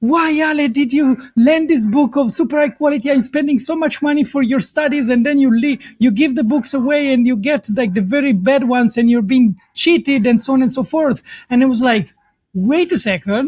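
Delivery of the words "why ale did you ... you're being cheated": exasperated scolding rant, put-on screaming mother voice. Retelling how the speaker's mother scolded over a lent notebook, imitating her screaming. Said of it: "she's like screaming at me".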